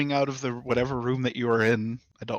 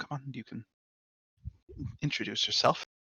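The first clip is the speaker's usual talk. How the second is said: soft, hushed whisper, barely voiced; 5 dB quieter than usual. Narrating a scene, he bends down to his companion; whispering. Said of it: "kind of like whispers".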